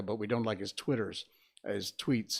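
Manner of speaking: ordinary talk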